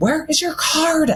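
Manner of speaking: very high-pitched scream-whisper. Retelling talking to someone on the bench: imitating own scream whisper. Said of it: "scream whispering at him".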